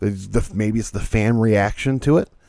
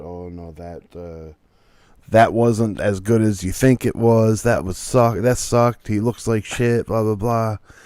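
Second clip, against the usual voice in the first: plain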